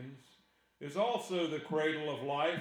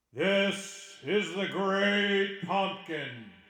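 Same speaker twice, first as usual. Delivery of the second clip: spooky put-on voice, booming out loudly; 3 semitones higher, 6 dB louder than usual. Answering someone who asks how to address him: scary Halloween voice. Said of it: "That was my Halloween voice".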